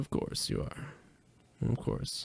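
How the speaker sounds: very slow, whispered mutter under the breath. Retelling own reaction while watching an interview clip: retelling an under-breath mutter. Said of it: "under my breath I went".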